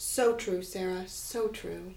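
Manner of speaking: serene, soft, unhurried, super calm zen voice. Agreeing with sarah during their chat, super calm tone. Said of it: "The super calm, calm [name] tone".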